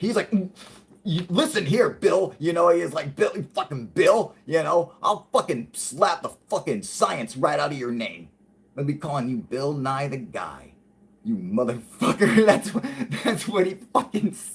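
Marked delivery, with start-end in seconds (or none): 1.0-12.5 put-on mad man voice, mock-angry. Retelling how a man confronted Bill Nye, imitating him getting mad. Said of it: "he was getting mad".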